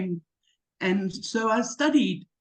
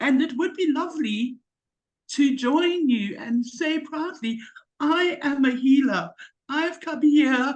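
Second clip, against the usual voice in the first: overcome with emotion, voice pitched up; 5 semitones higher than usual. Addressing listeners the speaker hopes to join, becoming emotional. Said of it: "Sorry, I'm emotional".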